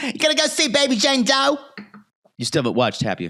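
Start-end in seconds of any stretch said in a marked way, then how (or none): 0.0-1.6 put-on Philly accent tinged with Brooklyn, very high pitch. Imitating a character from a tv show: philly accent by way of brooklyn. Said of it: "I sound like the woman from The Pit".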